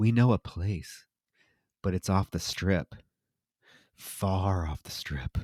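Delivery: mock-ominous voice, put-on ominous tone. Retelling the girls' answer to the guys, in a mock-ominous voice. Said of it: "they say very ominously".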